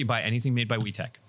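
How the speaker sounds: ordinary talk, nothing marked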